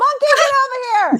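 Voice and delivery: very high-pitched, loud screaming. Calling someone over to help translate, screaming. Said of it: "You just heard me screaming through the microphone".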